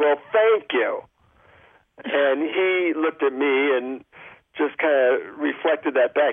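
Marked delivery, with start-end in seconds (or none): 0.0-1.0 mock, snotty, pissed-off tone. Recalling how the speaker answered a man who disappointed them, retelling a snotty tone. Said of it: "in a snotty tone".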